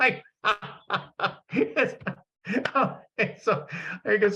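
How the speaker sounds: talking through laughter. Reading another speaker's patterns and apologizing: laughing while talking. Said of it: "sorry, I'm laughing so much".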